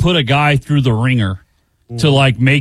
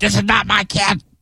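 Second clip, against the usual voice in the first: mock yelling, higher pitch; 5 semitones higher, 4 dB quieter than usual. Speaker retells grandma yelling at mom about the screaming kid, retelling grandma's yell. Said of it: "grandma's yelling at mom like".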